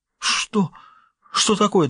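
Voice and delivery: quavering, trembling, very high-pitched voice. Iverson asks Weber, who stares at him in surprise, in a trembling voice. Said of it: "дрожащим голосом спросил Иверсон".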